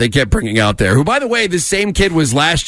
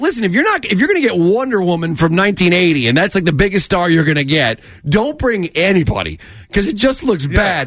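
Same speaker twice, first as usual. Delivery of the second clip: ordinary delivery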